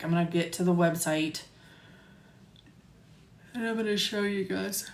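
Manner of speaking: words stretched and pulled out through a yawn. Presenter about to show viewers the website after a long day, yawning. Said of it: "Sorry, I'm yawning".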